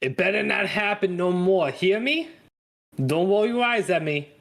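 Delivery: put-on tipsy, slight Brooklyn accent. Voicing the diner owner scolding the counter girl: drunk Joel voice with a twinge of Brooklyn. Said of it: "drunk Joel with, like, a twinge of Brooklyn".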